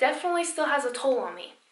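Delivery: emotional, overcome voice, high and rushed. Recounting a story about the bus driver, the speaker is getting emotional. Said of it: "I'm getting emotional".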